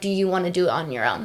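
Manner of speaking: ordinary delivery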